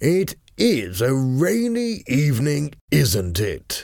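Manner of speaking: languid, very slow, drawn-out, bored drawl. Narrator reads a man remarking as he enters the room, slow, bored. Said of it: "he said in a slow, bored voice".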